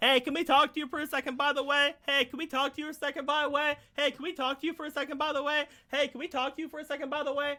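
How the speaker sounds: high yell echoing back over and over. Voicing the echo of a yell repeating back: echoing yell. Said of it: "because you used echo voice".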